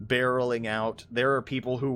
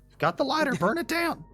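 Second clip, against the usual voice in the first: put-on country accent, higher pitch. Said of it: "I've gone into the country voice for him".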